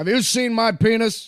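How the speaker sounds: strained voice, pitched very high and loud. Trying out an impression for the others: Gene Hackman voice. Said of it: "It's Gene Hackman style".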